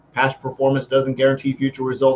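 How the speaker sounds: rushed, loud, rattled-off fine-print disclaimer style. Giving an income disclaimer the way all disclaimers do, rattled off really fast. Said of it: "I said that really fast, just like they do in all the disclaimers".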